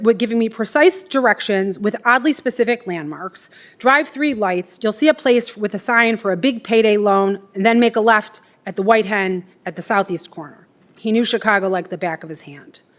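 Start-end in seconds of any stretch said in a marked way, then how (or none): none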